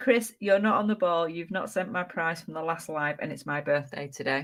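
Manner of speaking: usual speaking voice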